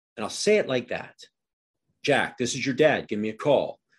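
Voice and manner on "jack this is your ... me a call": firm, assertive, no-nonsense tone. A dad telling his son to give him a call, assertive voice. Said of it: "Do you notice my assertive voice?".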